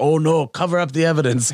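put-on German accent in English. Acting out what others said, in a German accent. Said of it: "I like that German accent".

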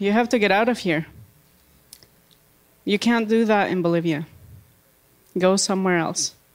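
ordinary talk

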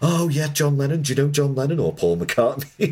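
high, mock starstruck American gush.

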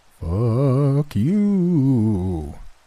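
high-pitched, quavering, spooky ghost voice. Floating a middle finger in front of her, answering in a wavering ghost voice. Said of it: "as I did a wavering ghost voice".

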